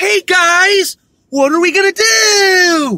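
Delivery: mocking, high, loud kids'-show line reading. Complaining about a kids' show: mocking an actress's line reading. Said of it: "Every fucking line in the script sounds like that".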